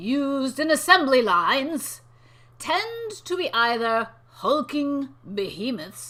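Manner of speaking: dramatic, theatrical delivery. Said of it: "could you read it in a dramatic way?".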